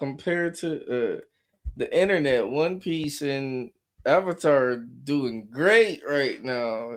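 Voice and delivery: slow, sarcastic drawl, every word loaded. Commenting on live action adaptations in a sarcastic tone. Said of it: "You hear the sarcasm in my voice".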